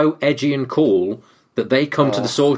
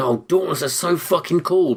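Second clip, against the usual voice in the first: mock words pushed through laughter, put-on laughing; 4 semitones higher than usual. Retelling how the film's heroine talks: imitating someone smiling and laughing. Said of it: "She's smiling, laughing, and going".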